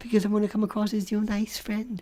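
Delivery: soft whisper. Acting out a bit, the speaker answers someone who can't hear them, whispering. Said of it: "That's because I'm whispering".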